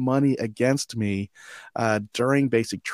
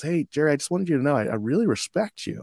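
almost intimate, close delivery; 2 semitones higher than usual. Retelling what a coworker said while cleaning: imitating a soft, intimate voice. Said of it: "a soft, uh, almost intimate way".

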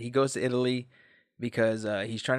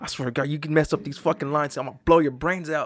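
mock enraged, furious ranting; 3 semitones higher, 3 dB louder than usual. Retelling a man in his trailer scolding himself at the mirror: imitating someone super mad. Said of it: "He's like super mad at himself".

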